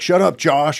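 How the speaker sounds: mild, sketched-in token shout. Retelling a brother who talked loud to get him in trouble: imitating someone talking loud. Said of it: "he would start talking real loud".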